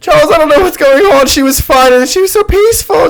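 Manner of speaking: acted, very high, weepy, tearful sobbing voice. Retelling a movie scene where the wife speaks, imitating someone crying. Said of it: "She's, like, crying".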